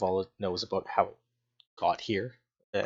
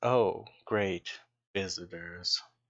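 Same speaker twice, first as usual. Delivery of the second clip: glum, mopey, gloomy cartoon donkey voice. The silver dragon animates its head and greets the visitors in an Eeyore voice. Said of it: "in sort of a you know Winnie the Pooh Eeyore voice".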